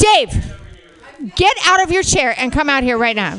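stern, commanding, no-nonsense teacher voice. Calling Dave out of his chair and up front, stern teacher voice. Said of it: "That was my teacher voice".

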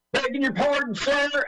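put-on American accent, pitched very high. Quoting a soldier in a film, imitating an American accent. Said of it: "that guy's American accent is excellent".

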